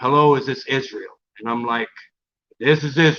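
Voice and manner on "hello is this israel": put-on rich, deep voice. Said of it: "it's this rich, deep tone".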